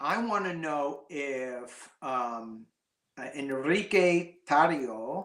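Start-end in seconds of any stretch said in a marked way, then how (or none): 3.3-5.3 English speaker's Spanish accent, unrolled R, rising end.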